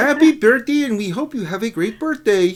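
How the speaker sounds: belted out loudly in a puppet voice. Recording a birthday greeting for an eight-year-old girl in a Kermit the Frog voice. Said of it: "she wanted Kermit the Frogs to do her".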